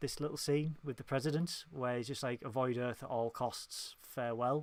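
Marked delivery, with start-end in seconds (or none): none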